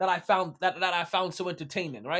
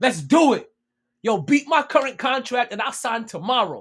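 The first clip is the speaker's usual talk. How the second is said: loud shouting, projected far; 3 semitones higher, 7 dB louder than usual. Retelling a reply yelled back to a wrestling offer: imitating someone yelling. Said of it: "He yells out".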